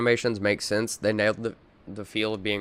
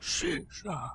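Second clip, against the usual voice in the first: put-on half-whispered, breathy, drunken slurring; 6 semitones higher, 12 dB quieter than usual. Imagining a hungover prisoner waking in a cell: imitating drunk slurring. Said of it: "just drunkily slurs".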